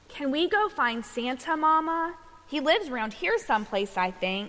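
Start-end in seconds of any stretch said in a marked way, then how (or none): none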